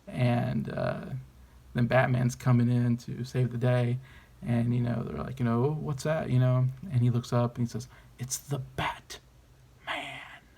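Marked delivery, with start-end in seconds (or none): 8.2-10.4 very slow, breathy, over-the-top villainous whisper. Retelling a movie villain's line on seeing Batman, over-the-top villainous voice. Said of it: "he says it like such kind of over top, you know, villainous voice".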